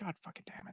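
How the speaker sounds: muttering under her breath. Voicing a character who looks at a creature lying in the dirt: muttered under her breath. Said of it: "all you can hear her say under her breath".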